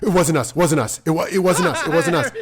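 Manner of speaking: a high-pitched, loud voice full of panic. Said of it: "they're like".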